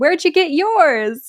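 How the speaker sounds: acted-out high, loud shout. Storyteller recounting a character shouting over another, retelling a shout. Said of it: "Emerald shouts over him".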